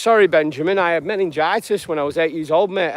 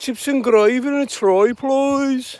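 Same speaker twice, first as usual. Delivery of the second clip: attempted Birmingham accent, pitched up; 7 semitones higher than usual. Speaker tries out an accent for a mentioned town, attempted birmingham accent. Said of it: "I'll try and do a Birmingham accent".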